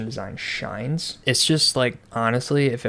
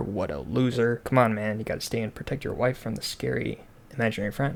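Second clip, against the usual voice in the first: plain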